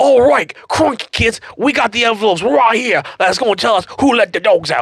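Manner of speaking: put-on high Australian accent. Retelling what the awards hosts said: imitating Crocodile Hunter's Australian accent. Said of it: "You found an accent you're good at".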